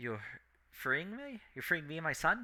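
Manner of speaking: soft, high-pitched, full of hope. A woman asking her rescuers whether she and her son are being freed, hopeful.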